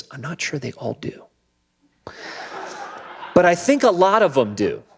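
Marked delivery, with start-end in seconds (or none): 0.1-1.2 hushed half-whisper. Retelling what a man said in a conversation, imitating him whispering. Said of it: "and he kind of whispers".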